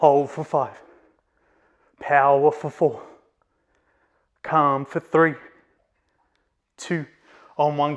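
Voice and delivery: voice shaking and trembling with strain. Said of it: "You might hear the shaking in my voice".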